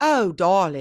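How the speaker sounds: put-on loud, odd Southern accent. Imitating an audiobook narrator's voice for a character from the South: Southern Scarlett O'Hara accent. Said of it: "trying to make him sound like this".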